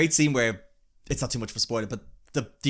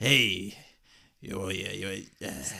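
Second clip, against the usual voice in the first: put-on tired old man voice, lower and quieter; 6 semitones lower, 5 dB quieter than usual. Mocking the new movie's version of the line: imitating a tired old man. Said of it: "an old man hunched over a bar being like".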